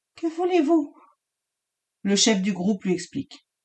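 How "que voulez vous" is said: thin, very high, small little voice. Reading a story aloud, a terrified jailer asks armed men: small high-pitched voice. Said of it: "D'une petite voix aiguë".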